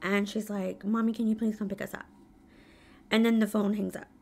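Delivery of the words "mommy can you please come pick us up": mock whisper, quieter than surrounding speech. A mother retelling her daughter's late-night phone call, imitating a whisper. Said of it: "she sounds like she's whispering".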